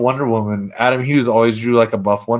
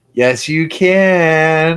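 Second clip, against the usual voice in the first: high-pitched special voice with "can" stretched out; 6 semitones higher, 4 dB louder than usual. Retelling a greeting exchange, the speaker answers in China's voice. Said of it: "in her China voice".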